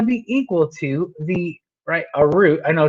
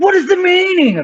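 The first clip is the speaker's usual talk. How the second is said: put-on English accent, very high, shrill, angry; 13 semitones higher, 5 dB louder than usual. Reading out a question the speaker always says this way, in an angry English voice. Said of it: "like an angry English voice".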